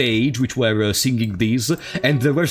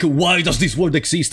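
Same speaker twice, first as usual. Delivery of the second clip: ordinary delivery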